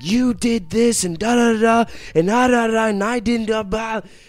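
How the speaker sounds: very high, very loud, all-out furious yelling. Recounting going back to the house after snapping: retelling hardcore yelling. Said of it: "I just started yelling".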